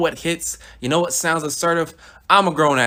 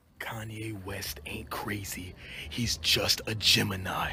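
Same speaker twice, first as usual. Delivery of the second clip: very quiet, low, barely audible whisper; 6 semitones lower, 12 dB quieter than usual. Making an aside mid-rant: whispered.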